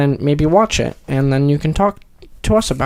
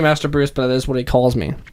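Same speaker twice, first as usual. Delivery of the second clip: ordinary talk, nothing marked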